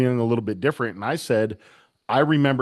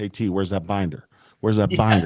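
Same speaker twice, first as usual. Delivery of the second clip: whispering, lower; 4 semitones lower than usual. Retelling what a friend whispered when someone went home: imitating someone whispering. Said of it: "He was whispering to me".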